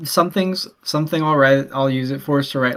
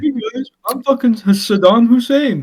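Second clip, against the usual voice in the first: mocking voice, higher and louder; 9 semitones higher, 5 dB louder than usual. Imitating how Brennan opens every episode: imitating Brennan. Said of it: "how Brennan says some dumb bullshit".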